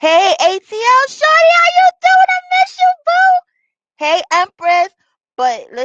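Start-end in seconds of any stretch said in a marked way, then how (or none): 0.0-4.9 very high, loud, full-on screaming. Breaking off to send shout-outs, screaming. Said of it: "I don't even know why I'm screaming".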